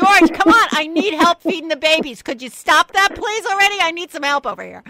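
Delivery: very high, very loud, shrill scolding yell. Speaker imagines the bird Ethel yelling at another bird for help; Ethel yelling, imitated. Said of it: "she's like yelling at him".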